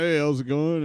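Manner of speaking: usual speaking voice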